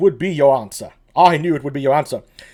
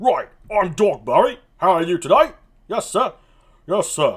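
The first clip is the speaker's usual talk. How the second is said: put-on well-spoken, nice and proper British accent; 2 semitones higher than usual. Giving Dogberry a voice before reading the scene, British Dogberry voice. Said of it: "I'll do the British again".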